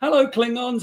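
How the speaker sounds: mock very high, shrill yelled call. Retelling how she yelled out the window at people: imitating her yelling. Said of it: "she'll yell something".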